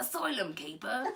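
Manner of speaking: wide, laughing attempt at a Cockney accent.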